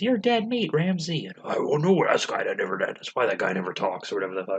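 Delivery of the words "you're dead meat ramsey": put-on very high kid voice. Imitate The Undertaker's cameo in Suburban Commando, The Undertaker with a child's voice. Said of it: "he has like a child's voice. He goes".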